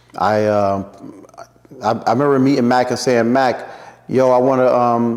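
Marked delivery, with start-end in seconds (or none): none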